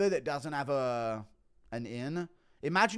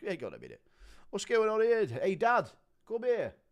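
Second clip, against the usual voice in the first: animated, high, swooping, lively voice; 6 semitones higher than usual. Play Tom Aspinall watching a John Jones video for the first time, Tom Aspinall impression. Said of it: "Impression of Tom Aspinall".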